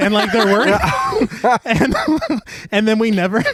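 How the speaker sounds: high-pitched talking through laughter.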